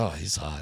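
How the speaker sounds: airy, breath-filled, hushed delivery. Retelling his wife's remark about Tom Brady: imitating a breathy remark. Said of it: "she said it, like, breathy".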